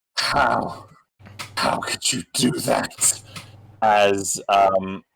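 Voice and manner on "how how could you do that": rough, creaky, reproachful, accusing woman's voice. Voicing a woman who appears beside a player: voicing an accusing woman. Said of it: "you hear a voice, uh, uh, say to you".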